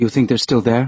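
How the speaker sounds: said softly. Soledad asks a question at a table, said softly. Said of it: "Soledad said softly".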